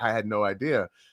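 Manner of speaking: normal talking voice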